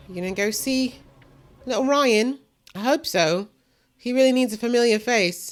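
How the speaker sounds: British accent. Reacting to a show scene while watching: british accent. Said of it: "I'm talking in a British accent all of a sudden".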